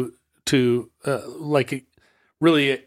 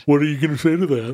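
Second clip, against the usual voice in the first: put-on dumb voice, mocking parroting. Repeating the other speaker's words back at them: put-on dumb mocking voice. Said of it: "I don't sound like that".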